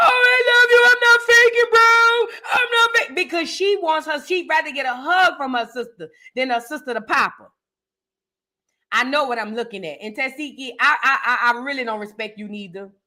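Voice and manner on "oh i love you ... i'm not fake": mock very high, slow, drawn-out weepy begging. Imitating someone in a clip who was crying and begging: imitating someone crying. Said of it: "That's why she crying".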